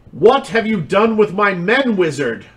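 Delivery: light, stagey, high-pitched mild yell. Narrating a game scene, the speaker voices someone at the top of the stairs: loud yelling voice. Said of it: "a loud voice yelling".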